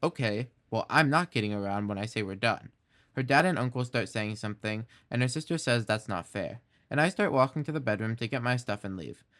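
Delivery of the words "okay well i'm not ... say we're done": usual speaking voice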